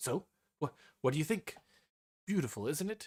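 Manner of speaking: keen, proud show-off tone. Game master voices Tapala asking the group: eager. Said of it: "waiting eagerly".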